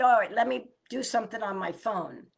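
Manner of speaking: normal talking voice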